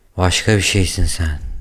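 dazed, groggy, fading, trailing off. Just injected with a syringe, someone looks at i̇laja before passing out; dazed, fading. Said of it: "dedi kendinden geçmeden önce".

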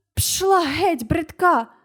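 called out, high-pitched and awkward. Narrator, finally able to speak, shouts at a crow pecking him; shouted. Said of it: "закричав я".

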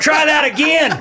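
shouting. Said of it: "just yelling at kids".

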